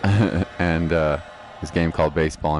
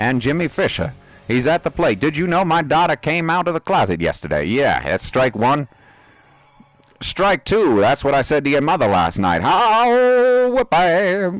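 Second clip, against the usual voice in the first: funny baseball announcer voice, much higher, slower; 10 semitones higher, 6 dB louder than usual. Recalling how the baseball announcers talked during a game: funny baseball announcer voice. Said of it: "all the baseball announcers had this really, really funny voice".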